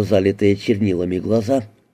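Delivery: ordinary delivery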